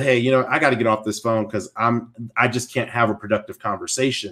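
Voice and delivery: normal talking voice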